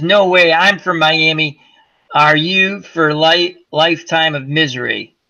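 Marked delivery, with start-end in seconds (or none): none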